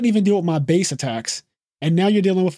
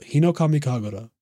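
mock calm delivery, much lower pitch; 3 semitones lower, 3 dB quieter than usual. Speaker retells how a character said the attack name: imitating a calm delivery. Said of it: "Just like the calmness".

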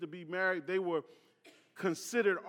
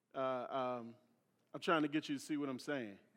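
usual speaking voice

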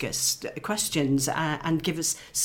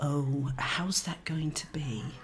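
put-on dropped, whispering voice, quieter; 5 dB quieter than usual. Retelling a former colleague's reply, imitating her dropped, whispering voice. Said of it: "her voice dropped".

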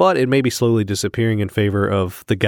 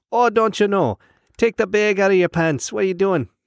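put-on Wisconsin accent, pitched very high; 11 semitones higher than usual. Retelling talking to the students from Wisconsin in their own accent: imitating a Wisconsin accent. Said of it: "to them like them".

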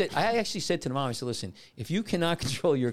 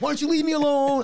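put-on shrill, very high, loud kid's yell; 13 semitones higher, 7 dB louder than usual. Recounting a boy of eight or nine yelling back at him, acting out the yell. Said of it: "It's like yelling at me".

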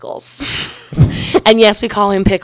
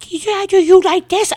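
mock baby talk, pitched higher; 11 semitones higher than usual. Retelling how an ex kept talking to her: imitating baby talk. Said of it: "he just wouldn't stop".

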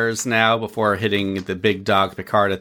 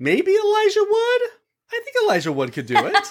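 pitch lifting upward on Elijah Wood. Suggesting who could play Data, with a rising uptick in voice. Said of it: "I love your uptick in your voice there".

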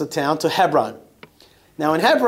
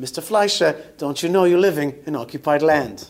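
put-on failed Australian accent that drifts into British. Retelling what an Australian journalist said to them: failed Australian accent. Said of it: "I can't do Australian, so it sounds British".

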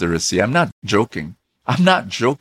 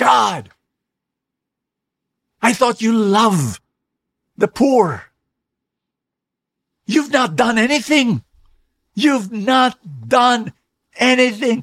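distraught, shrill, very high-pitched scream; 12 semitones higher than usual. Retelling how a man at an empty church altar cried out: screaming at god. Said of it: "and then he screamed".

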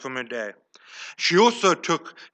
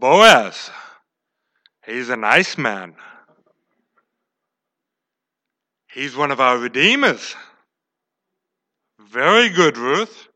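put-on loud older-woman voice, Boaz drawn out; 4 semitones lower, 6 dB louder than usual. Retelling Ruth's story, answering Ruth in Naomi's voice: 60-year-old woman voice. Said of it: "I don't do a 60 year old woman voice well".

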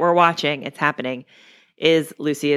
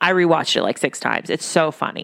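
ordinary talk, nothing marked

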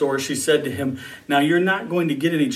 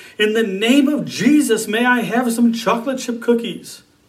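high, all-out yelling at the top of the lungs; 8 semitones higher than usual. Retelling a boy standing in a shopping cart: acting out a loudest-voice shout. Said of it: "he shouted in his loudest voice".

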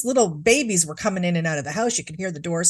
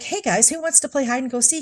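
sweet, calm, gentle, pitched-up motherly voice; 7 semitones higher than usual. Retelling a mother next door calling to the kids, imitating a calm, soft feminine voice. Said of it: "in a very calm, soft feminine voice".

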